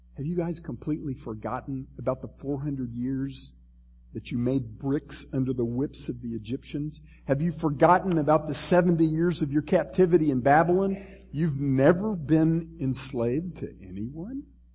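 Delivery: ordinary talk, nothing marked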